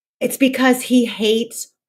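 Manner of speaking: ordinary talk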